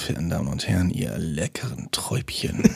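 sultry, erotic, low, creaky seductive voice. Told by the other speaker to do it erotically, addressing ladies and gentlemen: erotic voice. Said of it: "du sollst es mit einer erotischen Stimme machen".

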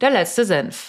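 clear, formal news anchor delivery. Trying out a line like a ZDF news editor, in Tagesschau newsreader style. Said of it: "so wie so eine ZDF-Redakteurin. So bei der Tagesschau".

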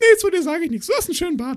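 very high, really sweet cartoon voice. Retelling what a man at the ring said to the speaker: sweet SpongeBob-like voice. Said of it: "so eine Stimme rausgehauen, aber so richtig süß".

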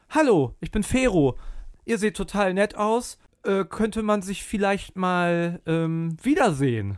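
acted, kindly, amiable, very nice, friendly voice. Telling how a man approached them and spoke up, acting out a very nice greeting. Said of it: "hat so ganz nett gesagt".

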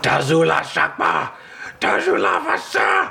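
high, rasping creature screech in a strange language. A game master voices a small hell knight charging the players, screeching in an unknown language. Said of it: "It screeches in an unknown language".

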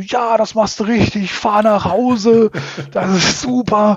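acted, high-pitched, frantic, hectic panicked voice. Recounting what he told the man slowly driving off, retelling his own panic. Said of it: "ich so in meiner Panik und Hektik".

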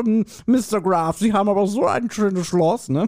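put-on poor, overdone American accent. Imitating American guests visiting, in a bad American accent. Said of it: "die reden noch immer so".

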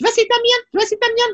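very high, double-speed, warped, distorted voice. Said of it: "so wie doppelte Geschwindigkeit".

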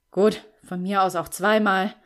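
sighing, irritated. Reading a character's reply during a talk about household chores, annoyed sigh. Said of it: "seufzte Lukas genervt".

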